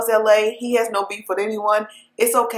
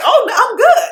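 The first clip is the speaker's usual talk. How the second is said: very high, bright, all-smiles cheerful voice; 12 semitones higher, 7 dB louder than usual. Retelling an arrested man answering reporters outside jail, retelling a happy reply. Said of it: "he's like all smiles, he's all happy".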